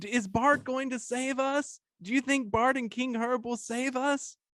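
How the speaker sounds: crowd screaming, high and drawn-out. Voicing people in the tavern who call out questions: people screaming out. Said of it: "some people scream out".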